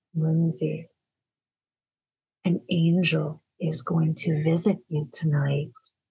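eerie, zoned-out, low creepy trance voice. Speaker retells what she said to Lindsey while zoned out, imitating a creepy voice. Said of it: "she said this like creepy voice".

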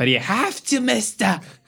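put-on thick German accent, pitched very high. Retelling an airline agent refusing boarding without a PCR test, strong German accent. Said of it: "exactly like this, with that strong German accent".

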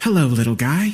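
gentle, mellow, cheerful voice. A voice answers the narrator's call from inside a dark metal box, soft, mellow and cheery. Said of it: "The cheery voice that answered was soft and mellow".

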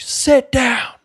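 very high, screamed, acted-out shriek. Retelling how he was made to come to the front of the class: retelling a scream. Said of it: "he's screaming at my face and he's like".

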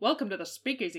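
vintage 1930s speakeasy-era style delivery. Asked to read the passage aloud, the speaker uses a special 1930s voice. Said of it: "my special 1930s voice".

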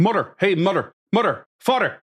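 put-on strong Irish accent, high and calling out. Retelling the groom's cousin calling across the room to his parents: imitating super strong Irish accent. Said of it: "it's super strong Irish".

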